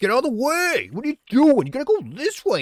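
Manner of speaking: shrill, bossy yelling, very high and loud. Retelling a gaming partner's commands during play: imitating someone yelling. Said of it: "yells at you and shit".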